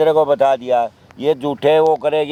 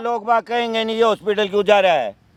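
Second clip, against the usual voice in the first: high, heated, furious angry shout; 7 semitones higher than usual. In an argument about going to a hospital, one person is shouting angrily. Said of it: "क्यों चिल्ला रहे हो यहाँ पे?".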